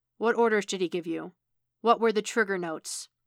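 plain

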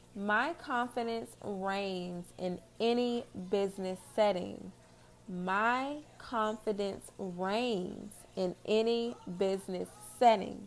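very slow, drawn-out, deliberate delivery. Reading an affirmation to listeners so they can write it down, very slow. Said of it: "I'm going to read them very slow".

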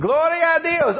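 full-throated, high, top-of-the-lungs holler. Retelling a woman at a church service: imitating someone yelling. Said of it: "she would keep yelling, like, top of her lungs".

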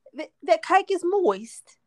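put-on loud high-pitched British accent.

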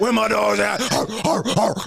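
voice embodying a dog.

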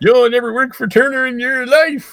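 put-on old prospector voice. Voicing Ted Turner in a comedy bit, in an old prospector voice. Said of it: "this like old prospector voice".

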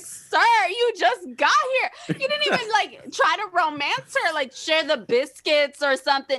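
high, indignant, incredulous scolding tone.

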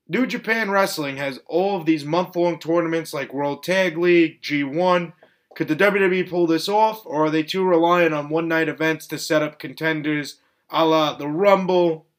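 ordinary delivery

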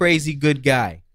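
put-on Boston accent. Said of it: "Is that a Boston accent?".

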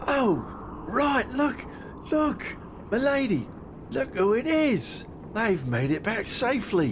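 put-on very high, swooping little old man voice. A game master voices the little old fella as the players walk in, little old fella voice. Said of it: "It's none other than the little old fella you saw down at the longhouse. / And as he sees you walk in, / It's none other than the little old fella you saw down at the longhouse".

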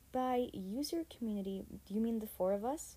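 plain

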